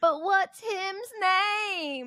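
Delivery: put-on small boy's voice, high, slow, southern accent, drawn out. Retelling a little boy who kept asking a question, little southern accent. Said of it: "go in this little southern accent".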